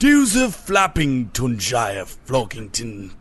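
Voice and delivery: put-on posh English accent with odd timbre. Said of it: "it just sounded posh".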